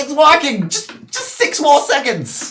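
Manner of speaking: very high-pitched, thrilled, excited yelling. Storyteller voicing an excited character yelling down to a player: excited yell. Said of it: "He's gonna yell down to you".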